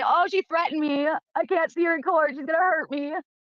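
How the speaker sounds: put-on high, slow, tearful sobbing voice. Mocking the other speaker during an argument: mock crying voice. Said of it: "Are you gonna cry and say".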